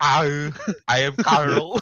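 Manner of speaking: very slow, put-on Austrian accent. Acting out the robot Carl introducing himself: Austrian accent as Carl. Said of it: "ignore my Austrian accent".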